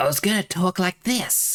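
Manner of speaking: slithery, hissing character voice. Recalling the voice first planned when talking as Nate: slithery Nate voice. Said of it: "I was gonna give him a bit of a slither with his voice".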